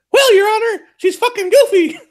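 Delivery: high squeaky cartoon mouse. Telling a divorce-court joke, answering the judge in a Mickey Mouse voice. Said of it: "That's the extent of my impersonations".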